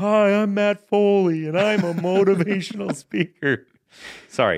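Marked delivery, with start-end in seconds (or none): 0.0-3.7 slow, loud, high-pitched bellowing. Quoting a motivational speaker character: Matt Foley impression. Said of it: "his name is M-, Matt Foley".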